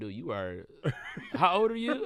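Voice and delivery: laughing while talking, amused, swooping pitch. Retelling what the agency people said: imitating someone laughing while talking. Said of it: "they were kinda funny, like, laughing".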